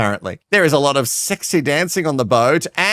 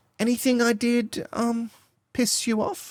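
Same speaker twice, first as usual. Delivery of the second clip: mock girlish voice, higher and quieter; 7 semitones higher, 8 dB quieter than usual. Retelling what a cast member asked another: imitating an "I'm just a girl" voice. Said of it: "she says in her best, "I'm just a girl voice".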